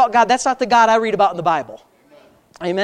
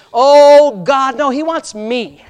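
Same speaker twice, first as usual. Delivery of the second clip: loud, slow, put-on churchy praying voice; 3 semitones higher, 6 dB louder than usual. Speaker mocking how people from religious backgrounds pray, in a put-on prayer voice. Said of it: "you got to change your voice".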